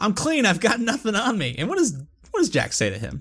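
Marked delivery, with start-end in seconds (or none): 0.0-1.6 raised, high, yelling voice. Retelling a game scene where a cornered character yells: imitating someone yelling. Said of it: "Zach just yells at him".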